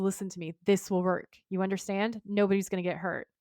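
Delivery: ordinary talk, nothing marked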